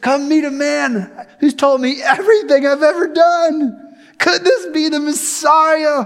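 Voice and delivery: loud, high joyful cry screamed through laughter. Retelling a woman running back into town after meeting Jesus, imitating screaming with laughter. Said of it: "screaming at the top of her lungs with laughter".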